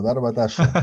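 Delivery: put-on Argentine accent. Repeating the other speaker's phrase: imitating an argentine accent. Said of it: "me gusta con el acento argentino".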